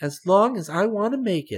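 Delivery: bright, very high voice. Asked how long his story will run, he answers: said brightly. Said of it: "answered Chick brightly".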